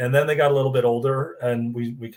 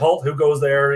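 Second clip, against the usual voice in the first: loud, protective little toy-bear guard voice; 3 semitones higher, 5 dB louder than usual. Retelling bedtime play where a toy bear guards a child: imitating the bear's guard voice. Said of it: "I'd make a voice, like, he would say".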